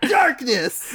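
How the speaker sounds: put-on very high-pitched, edgy yell. Retelling a scene where Riku gets edgy and screams: imitating Riku yelling. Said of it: "He just yells darkness".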